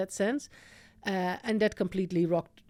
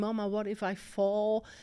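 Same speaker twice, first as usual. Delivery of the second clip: put-on play-acted, tearful, crying little girl voice, rising; 3 semitones higher than usual. Retelling a daughter's question while learning to ride a bike: imitating a crying child. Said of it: "crying and saying".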